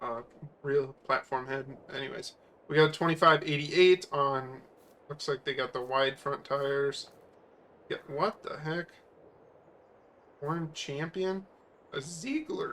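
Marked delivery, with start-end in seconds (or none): 11.9-12.7 voice cracking and breaking. Naming the brand of a platform head on camera, with a voice crack. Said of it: "That's a voice crack".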